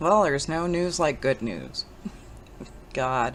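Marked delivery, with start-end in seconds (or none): 0.2-1.8 low, swooping, sarcastic, tongue-in-cheek tone. Speaker looking through the news about Hillary's health, sarcastic. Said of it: "I say that sarcastically".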